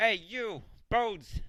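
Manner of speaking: very high, loud, jeering shouted taunt. Narrating a game, a character aims a rock at skeletons and is shouting a taunt. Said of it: "He aims with his rock and shouts".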